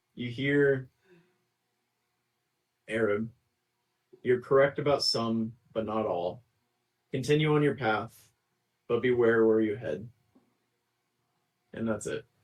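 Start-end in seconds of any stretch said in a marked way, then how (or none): 2.9-10.1 eerie, frightening, mysterious, godlike otherworldly voice. Voicing a mysterious voice heard during a prayer: frightening mysterious voice. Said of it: "it almost frightens you when you hear a voice".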